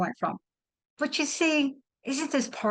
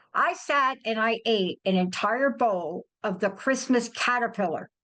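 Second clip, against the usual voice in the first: ordinary talk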